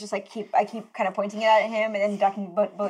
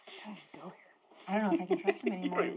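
hushed, stage half-whispered muttered aside; 9 dB quieter than usual. A player voices their game character alone in the woods, half-whispering to oneself. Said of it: "I whisper to myself".

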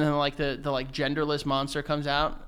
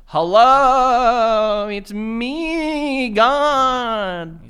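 very high, loud, slow grandmother voice, "me" stretched out; 9 semitones higher, 12 dB louder than usual.

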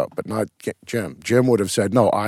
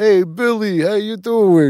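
put-on very high, loud New York accent; 12 semitones higher, 5 dB louder than usual. Retelling people dressed as characters greeting the speaker: Australian doing New York accent. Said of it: "these guys with these Australian accents trying to do a New York accent go".

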